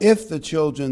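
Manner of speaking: the word "if" hammered with heavy stress. Reading Romans 8:16 aloud, with stress on the word if. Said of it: "I'm emphasizing the word if".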